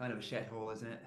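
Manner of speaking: soft, snide mutter half under breath. Voicing a character who comments on a restaurant: muttered under breath. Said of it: "but under his breath he says".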